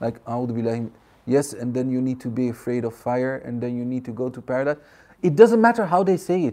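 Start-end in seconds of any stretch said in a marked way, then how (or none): 0.3-4.8 mock boring monotone, quieter. Imitating boring teachers they once had, imitating a monotone teacher. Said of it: "The way they talk is like very monotone".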